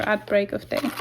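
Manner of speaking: usual speaking voice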